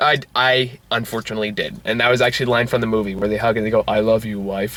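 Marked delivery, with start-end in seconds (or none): 3.9-4.8 put-on low, flat, bored monotone. Recalling a line from a movie to another speaker, imitating a boring monotone. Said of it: "Just like in that boring monotone way".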